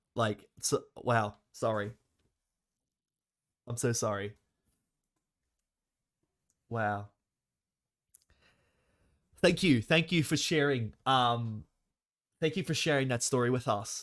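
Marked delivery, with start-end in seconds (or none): 0.2-9.8 deeply moved, overwhelmed, emotional. Apologizing and thanking someone who has just shared a story, really emotional. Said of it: "I actually got really emotional from that".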